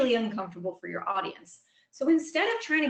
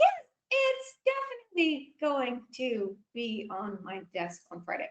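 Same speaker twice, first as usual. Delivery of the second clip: deliberately drawn-out, slow, unhurried pace; 3 semitones higher than usual. Demonstrating how a sentence sounds with a slowed-down delivery. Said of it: "just because I slowed things down".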